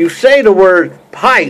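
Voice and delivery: ordinary talk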